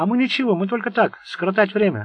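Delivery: meek, timid voice. After an angry shout to shut up, a man objects, timidly. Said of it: "робко возразил Пласки".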